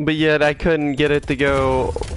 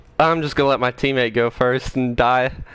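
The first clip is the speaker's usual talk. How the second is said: ordinary talk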